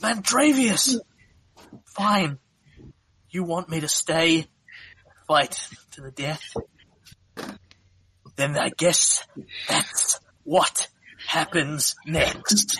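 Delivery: high, hissing mantis-creature voice. A game master voices a mantis turning on the players: hissing mantis voice. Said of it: "as only a mantis can with her multifaceted eyes, / And she turns and glares at you, / and then hisses at you in infernal".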